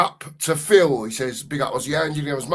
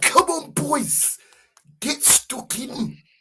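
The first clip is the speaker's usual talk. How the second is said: terrible put-on German accent, very high; 11 semitones higher than usual. Voicing a man urging the boys on, in a terrible german accent. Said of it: "Terrible accent from me there".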